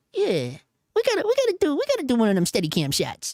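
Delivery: high, bouncy, animated chatter with stumbles. Acting out an imagined talk about a Steadicam shot: Scorsese impression. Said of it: "I don't know why Scorsese talks like that".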